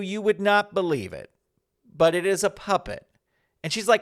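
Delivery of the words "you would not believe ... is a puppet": normal talking voice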